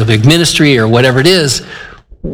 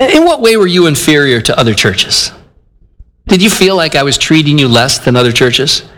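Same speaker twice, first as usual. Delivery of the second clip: dry, needling, sarcastic tone. Reading out an apostle's rebuke to a church: imitating sarcastic tone. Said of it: "he's showing a little sarcasm here".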